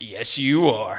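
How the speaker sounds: very low, deep schoolyard bully voice. Retelling what a bully said back to the speaker, in a deep bully voice. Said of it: "they have like this really good bully deep voice".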